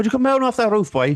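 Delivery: heavy Irish accent, very high pitch. Showing what comedy sketches always do, in a strong irish accent. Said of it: "but like strong Irish accents".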